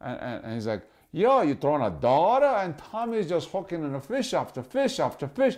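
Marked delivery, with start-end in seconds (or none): 1.1-2.5 put-on Massachusetts-accented speech. Retelling what a guy asked about a friend's lure, in a Massachusetts accent. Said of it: "Massachusetts accent".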